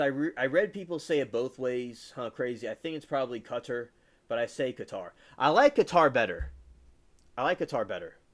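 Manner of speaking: plain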